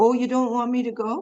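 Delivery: put-on, strong northern English accent in a man's voice. Retelling what Ram Gopal Prabhu said to a little boy, strong northern accent. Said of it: "He had a very strong northern accent".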